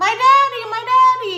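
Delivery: put-on frantic, terrified child scream, very high, loud. Parent recounts a son screaming as his father is shoved into a car; retelling son's screaming. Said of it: "And my son screaming".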